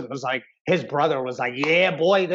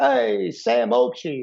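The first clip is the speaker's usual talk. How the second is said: bad Sicilian accent imitation, higher; 6 semitones higher than usual. Imitating a former training partner: horrible sicilian accent. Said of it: "That was a horrible Sicilian accent".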